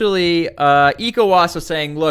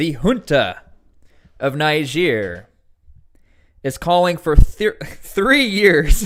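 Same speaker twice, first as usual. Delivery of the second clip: words broken up by laughs, talking through laughter. Telling YouTube viewers some shocking and confusing news from a weird video, laughing while talking. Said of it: "I'm laughing because this".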